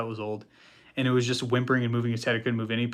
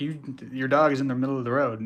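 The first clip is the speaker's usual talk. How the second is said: ordinary delivery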